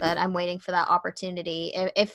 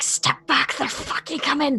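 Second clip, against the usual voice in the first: hissing, pitched-up voice; 8 semitones higher than usual. Turning to Clutch and speaking in a hissing voice. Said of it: "in a voice that sounds akin to a hiss itself".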